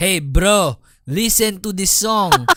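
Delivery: put-on loud, high Filipino accent. Asked if they copied his voice, speaker does a Jason impersonation, Filipino accent. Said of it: "This is my Jason impersonation".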